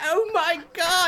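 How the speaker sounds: put-on British accent with Yiddish-inflected speech.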